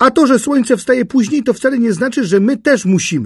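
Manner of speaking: bright, cheerful, very high-pitched calling out. Narrator reads Katastrofa calling out to Pypeć in the dark, cheerfully. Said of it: "zawołała Katastrofa radośnie".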